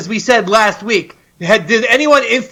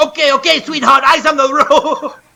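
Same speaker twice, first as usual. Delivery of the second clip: play-acted rude, bossy tone; 3 semitones higher than usual. Retelling how a passenger brushed off an Uber driver: imitating Flootsie being rude. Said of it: "How rude was Flootsie?".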